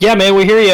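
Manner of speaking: mocking, sarcastic tone. Retelling how the kids at the park answered: imitating a sarcastic reply. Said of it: "a sarcastic".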